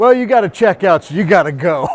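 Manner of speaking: put-on carefully enunciated, clearly articulated New York accent. Retelling what a woman said about having to check out: articulated new york accent. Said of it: "articulated New York accent".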